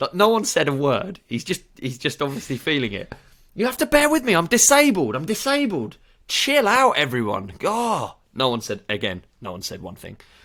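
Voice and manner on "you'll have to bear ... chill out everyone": put-on agitated, angry outburst, higher and louder. Retelling how a customer at the till started kicking off: imitating an angry customer kicking off. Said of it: "So he started kicking off".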